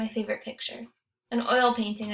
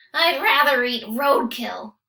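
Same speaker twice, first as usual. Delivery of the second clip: raspy dummy voice, loud and slow; 2 semitones higher, 7 dB louder than usual. Reading a story where a dummy at the dinner table suddenly speaks, rasping. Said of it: "he rasped".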